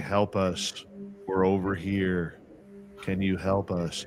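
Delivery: soft, flat, emotionless monotone with no inflection. Retelling a voice that changed from a woman to a man: retelling a flat monotone plea. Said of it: "And it was all monotone".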